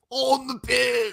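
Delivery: very high-pitched, put-on English accent. Asked by a co-host to redo the phrase in another voice, the speaker uses a put-on English accent. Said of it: "I'm just saying like a different English accent".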